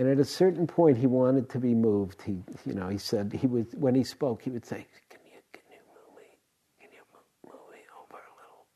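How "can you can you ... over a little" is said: fast, barely audible whisper. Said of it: "He was just barely whispering".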